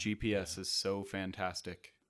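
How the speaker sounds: deliberately flat delivery. Poking fun at a review calling the podcast monotonous, mock monotone. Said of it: "I'm going to talk like this the entire".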